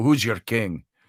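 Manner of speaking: put-on low Scottish brogue. Recalling asking people questions in character, in a Scottish brogue. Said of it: "so you're in a Scottish brogue".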